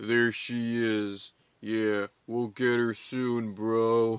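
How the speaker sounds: deep, slow, drawling dude-bro voice. Retelling two mysterious rangers' lines in a plot recap: deep dude-bro voice. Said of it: "they're speaking in deep voices".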